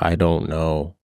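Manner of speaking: put-on weeping, tearful, crying through words. Retelling a phone call where the mother answered while crying: imitating someone crying. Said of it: "my mom just crying".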